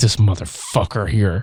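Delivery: put-on clenched-teeth voice. Retelling a film scene where the teacher glares at a man: imitating talking through gritted teeth. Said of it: "she was gritting her teeth".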